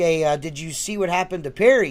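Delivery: normal talking voice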